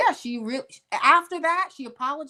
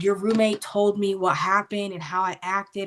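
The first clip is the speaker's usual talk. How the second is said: usual speaking voice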